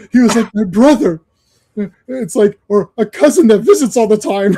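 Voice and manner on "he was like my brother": forced, put-on, fake teary weeping voice. Imitating a film character trying to cry, super fake: imitating fake crying. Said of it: "he's trying to cry while he's saying it. It's, like, super fake".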